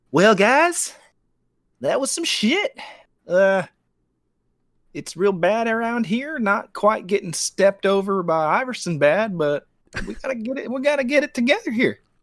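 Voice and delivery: put-on country accent with voice pitched very high. Imagining what he would tell a losing locker room, do a Ty Lue impression with a country accent. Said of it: "Why is Tyronn Lue have a country accent?".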